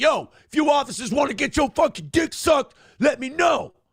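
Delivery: mock, very high, hostile and angry hollering. Retelling a video, the speaker imitates a man yelling at police officers, mock-angry. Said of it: "Why are you angrily offering us blowjobs?".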